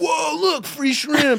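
mock high, shouted, overexcited starstruck gawking.

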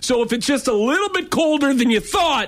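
passionate, worked-up rant, high-pitched and shouted. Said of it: "I'm getting very passionate and worked up".

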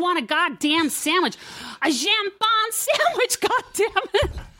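put-on bitchy American accent. Retelling a complaint about a sandwich in Europe, bitchy American accent. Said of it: "fucking really good bitchy American accent".

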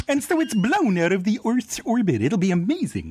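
high cartoon moose voice with swooping pitch. Pitching a show again in Bullwinkle's voice. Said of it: "pitch it again in Bullwinkle's voice".

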